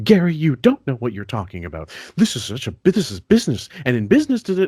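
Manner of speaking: high, haughty, condescending, swooping know-it-all tone. Imitating a colleague who dismisses Gary, higher haughty tone of voice. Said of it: "higher, haughty tone of voice".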